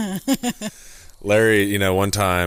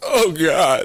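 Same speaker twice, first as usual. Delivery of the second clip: high, loud, pained yelp. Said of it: "you're like".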